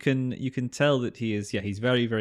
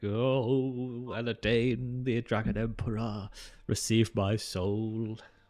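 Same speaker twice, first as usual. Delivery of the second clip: very slow, dragged-out, drawn-out mumbling. An imprisoned man being let out, praying to the Dragon Emperor, mumbling. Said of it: "You just hear him mumbling like".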